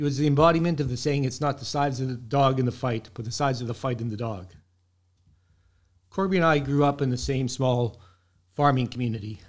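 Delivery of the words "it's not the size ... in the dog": usual speaking voice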